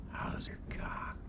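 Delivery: very quiet, lewd, filthy whisper. Retelling how a caller greeted him on the phone: Jim Fritzell's filthy whisper. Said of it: "In a filthy whisper".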